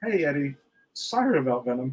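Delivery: mock dead-serious delivery, completely straight, no laugh. Retelling a movie scene where the ex-girlfriend speaks: imitating a deadpan line. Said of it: "with a straight face, she looks to him".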